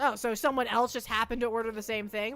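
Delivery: ordinary delivery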